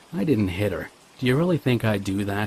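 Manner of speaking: plain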